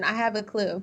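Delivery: flat, level monotone with zero inflection. Saying a short line on purpose flat, without any inflection. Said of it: "I'm gonna say it without any inflection".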